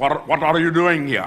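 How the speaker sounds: imitated Indian English accent. Retelling a street encounter, the speaker quotes a man in an indian english accent. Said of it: "he's speaking perfect Indian English".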